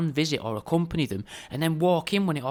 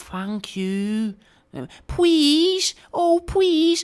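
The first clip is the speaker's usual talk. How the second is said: put-on very high, very drawn-out little girl voice; 12 semitones higher, 6 dB louder than usual. Showing how to say please and thank you, in a young prepubescent girl voice. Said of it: "pronounce it all like a young prepubescent girl".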